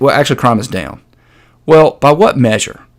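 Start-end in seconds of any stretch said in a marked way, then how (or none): 0.0-1.0 put-on flat deadpan delivery. Retelling what a guest said on a clip: imitating a deadpan delivery. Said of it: "he deadpans".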